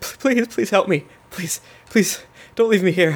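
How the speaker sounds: high, tearful, crying, repeated begging. Voicing a beaten, bleeding man begging not to be left: crying while pleading. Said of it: "and he's crying".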